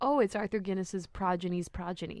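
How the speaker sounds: normal talking voice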